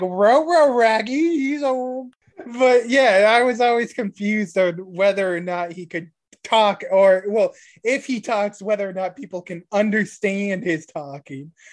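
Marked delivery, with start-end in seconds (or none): 0.0-1.4 cartoon dog voice, pitched up. Explaining how another cartoon dog talks differently from Scooby-Doo, doing a Scooby-Doo voice. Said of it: "it's not like Scooby voice where he's like".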